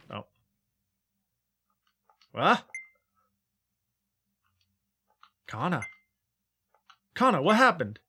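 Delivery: really worried, anxious voice. Voicing a game character calling out to Kana: really worried voice. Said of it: "just now you sounded really worried about Kana".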